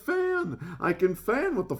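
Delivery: plain reading voice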